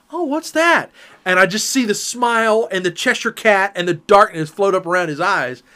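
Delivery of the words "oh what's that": put-on very high, doe-eyed, wide-eyed innocent tone. Retelling how the wife asked this: imitating a wide-eyed innocent question. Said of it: "when she did that Bambi deer in the headlights".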